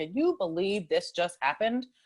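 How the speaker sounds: raging, heated, angry venting. Retelling how she rages with her partner: imitating herself raging. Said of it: "rage with him".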